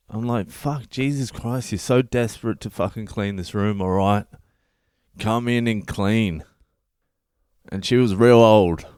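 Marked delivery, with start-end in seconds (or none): none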